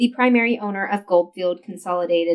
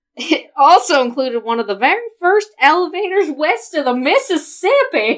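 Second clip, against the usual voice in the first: put-on high, loud voice in a southern accent. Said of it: "say in a southern voice".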